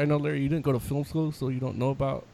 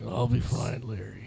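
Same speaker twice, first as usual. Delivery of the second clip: put-on old-man voice; 4 semitones lower, 4 dB quieter than usual. Imagining an actor's line while chatting with friends, in a Harrison Ford impression. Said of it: "Why are you doing Batman voice?".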